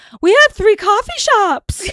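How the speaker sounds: very high, loud comedic lady voice.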